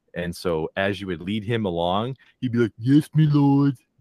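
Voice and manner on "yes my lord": high and loud game-unit style character voice. Describing a character being led along, voicing him: Warcraft peon voice. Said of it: "he reminds me of a, a, of a, a peon from the original Warcraft game".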